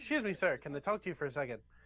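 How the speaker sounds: mock dead-serious, polite, straight and earnest tone. Retelling what a customer said: imitating a straight-faced delivery. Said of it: "he said this all with a straight face".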